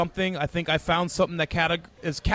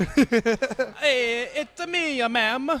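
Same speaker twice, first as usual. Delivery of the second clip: put-on Italian cowboy accent; 6 semitones higher than usual. Improvising a spaghetti western scene, a speaker tries an Italian cowboy accent. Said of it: "How do you do an Italian cowboy?".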